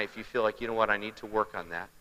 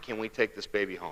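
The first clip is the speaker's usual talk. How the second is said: mock tearful pleading, quieter; 6 dB quieter than usual. Retelling a plea to take a baby home: imitating someone crying. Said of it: "as she's crying".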